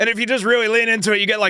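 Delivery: high, fast, gritty character voice. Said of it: "It's my Rick impression".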